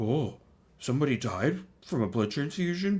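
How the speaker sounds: put-on dopey, dim-witted dumb-guy voice. Describing someone who likes doing little voices, dumb guy voice. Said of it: "He likes to do like a dumb guy voice, like".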